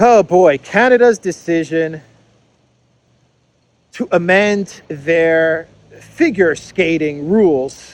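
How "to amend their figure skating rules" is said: slow, careful wording with long pauses. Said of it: "I'm speaking very slowly and very carefully".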